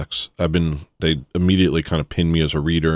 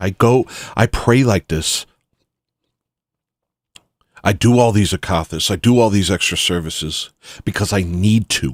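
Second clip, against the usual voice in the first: furious, fierce, intense, fervent delivery; 3 semitones higher than usual. Quoting what a pious man said to the speaker, retelling a furious remark. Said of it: "he said it with some fury in his eyes".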